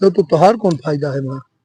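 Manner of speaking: hushed, secretive tone.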